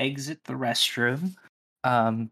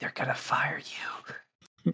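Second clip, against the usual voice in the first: secret, hushed, barely voiced whisper; 6 dB quieter than usual. Voicing a character telling another character a secret: whispering in his ear. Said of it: "whisper in his ear".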